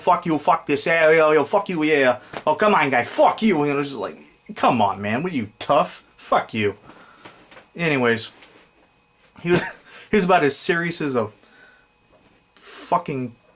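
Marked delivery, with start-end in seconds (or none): 0.0-6.7 mock gangster talk, put-on tough guy voice. Speaker mocks someone who acts like a gangster, in mock gangster talk. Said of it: "You act like you were a gangster".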